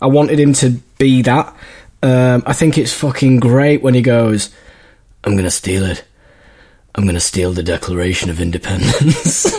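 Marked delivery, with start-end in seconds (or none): 5.2-9.6 dead serious, very low, completely straight delivery. Quoting a film line while reviewing the film: imitating Nicolas Cage saying it seriously. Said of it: "And he says it so seriously".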